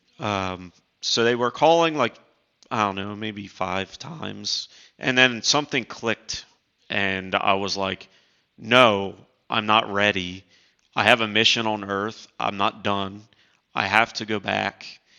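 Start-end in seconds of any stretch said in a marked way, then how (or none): none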